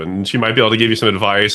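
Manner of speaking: ordinary delivery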